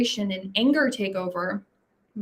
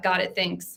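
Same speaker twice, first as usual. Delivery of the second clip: terse, short, clipped, curt delivery; 3 semitones lower than usual. Showing how a message sounds read in the writer's own tone: short, clipped, curt. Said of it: "when you read it in my tone sounds just like that".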